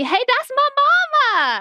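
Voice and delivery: very high, swooping shriek, "mama" stretched out. Retelling a reaction to a scene on the tv: imitating screaming at the tv. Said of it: "I screamed at the T V".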